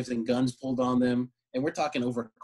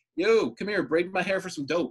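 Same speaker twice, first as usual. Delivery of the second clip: pitched-up, put-on man's catcall-style yell; 6 semitones higher than usual. Retelling a man calling to girls out a window: imitating a man yelling. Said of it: "this guy yelled out the window".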